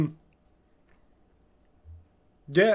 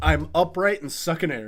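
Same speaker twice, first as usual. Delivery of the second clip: ordinary delivery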